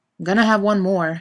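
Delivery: stubborn, obstinate, insistent. Dean answers his companions, who want to get going, stubbornly. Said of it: "Dean said stubbornly".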